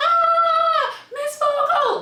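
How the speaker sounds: very high, shrill, stretched-out screaming shriek. Retelling how the bitten girl called for the teacher: imitating a girl screaming. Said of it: "started screaming".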